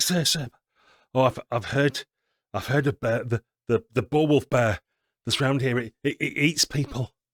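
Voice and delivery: stammering cry with repeated words, held back but carrying. Voicing a nervous servant calling to his master: hushed but carrying voice. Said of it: "trying to keep his voice quiet, but also make sure he's heard".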